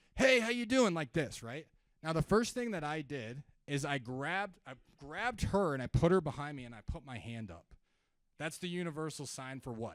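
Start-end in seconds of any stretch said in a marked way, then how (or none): 0.2-0.9 big, overexcited salesman voice, very high and loud. Retelling a salesperson approaching in line: imitating an overexcited salesperson greeting. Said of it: "big freaking".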